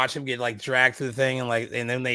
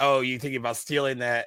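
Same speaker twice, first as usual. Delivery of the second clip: put-on condescending tone. Retelling a scene, imitating Bo being condescending. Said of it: "but he's so condescending".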